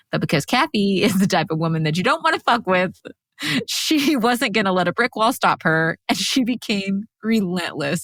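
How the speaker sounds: speaking through laughter. Retelling how Kathy became relentless to the other speaker; laughing while talking. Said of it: "I'm already laughing".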